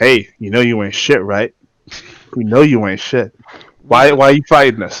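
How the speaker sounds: acted whispering. Casting a spell on a wizard in the game: in-character whisper. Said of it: "I am going to whisper".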